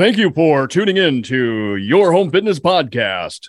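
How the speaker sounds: slow radio announcer voice, monster-truck style. Asked to show a special voice, doing a radio announcer voice. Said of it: "It's the same as my radio announcer voice".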